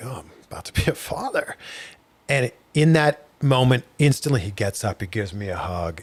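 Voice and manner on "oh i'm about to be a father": soft, wavering voice, getting choked up mid-sentence. Retelling first saying aloud about becoming a dad: retelling own choked-up words. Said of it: "I start to get a little choked up".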